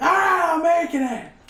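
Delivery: very high, very slow, drawn-out yell. Voicing a cook yelling back an order from the kitchen: yelling back from the kitchen. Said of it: "You hear the person yell back".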